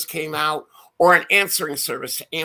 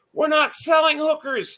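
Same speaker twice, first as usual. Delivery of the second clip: acted yelled reply, shouted and pitched up; 12 semitones higher than usual. Retelling how the guy who called back yelled at him, retelling a yell. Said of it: "He yelled it".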